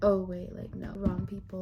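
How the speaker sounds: ordinary talk, nothing marked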